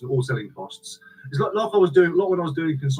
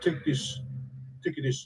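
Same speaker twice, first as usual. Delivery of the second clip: weak, bad put-on Romanian accent, whispered; 9 dB quieter than usual. Describing kind people coming round, speaker quotes them in a bad Romanian accent. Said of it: "I can't do the Romanian accent very well".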